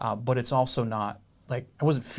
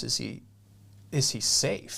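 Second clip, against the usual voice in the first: ordinary talk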